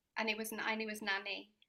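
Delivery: plain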